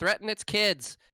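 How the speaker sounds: very high, very loud call from afar. The jailer shouts from across the way to Leon, shouting from far away. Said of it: "shouts from across wherever Leon is".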